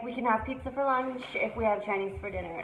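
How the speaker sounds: normal talking voice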